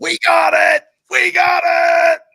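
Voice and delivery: excited screaming, very high and very loud. Retelling running upstairs and checking the tickets, retelling own screaming. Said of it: "I start screaming".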